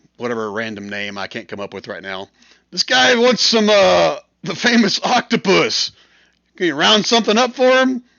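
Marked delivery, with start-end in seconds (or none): 2.7-8.0 loud, high-pitched holler. Voicing a bartender calling to another bartender down the bar: bartender shouting down the bar. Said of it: "he shouts back down the, down the bar".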